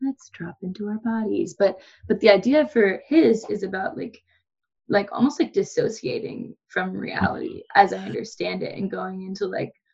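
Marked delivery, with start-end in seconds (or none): 0.0-1.5 soft, gentle meditation-guide tone. Imitating a meditation guide she likes: soft gentle meditation voice. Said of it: "soft, gentle".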